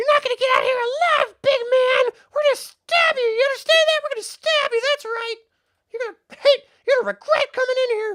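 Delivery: very high-pitched, loud, menacing, jeering kobold creature voice. Narrator voicing kobolds ganging up on a character in a fight, kobold voice. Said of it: "The remaining 3 are going to all gang".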